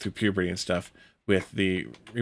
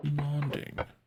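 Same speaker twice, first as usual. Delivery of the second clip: put-on British accent, higher and quieter; 7 semitones higher, 6 dB quieter than usual. Mocking the other player's fake british accent: mocking a fake british accent. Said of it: "making fun of your fake British accent".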